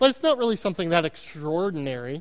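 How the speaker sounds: extraordinary with a slipped Oklahoma accent vowel. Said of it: "My Oklahoma accent is really coming out".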